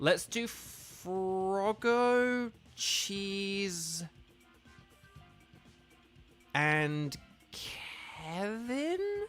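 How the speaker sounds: very slow, suspicious-sounding delivery. Reading out names for a team, saying it suspiciously. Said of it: "I know I'm saying it very suspiciously".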